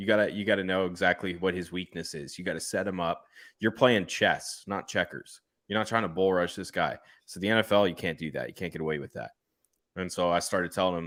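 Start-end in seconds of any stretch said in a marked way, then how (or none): none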